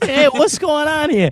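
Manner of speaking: put-on very high, loud, old-timey Brooklyn accent. Retelling how a woman spoke to him, imitating an old Brooklyn accent. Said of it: "that was like an old Brooklyn accent".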